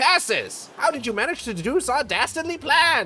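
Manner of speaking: cartoon villain voice, skeleton-like. Voicing a villain whose plan has just been uncovered, in a Skeletor voice. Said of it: "give this guy like a Skeletor voice".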